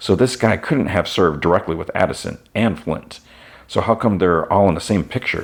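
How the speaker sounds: plain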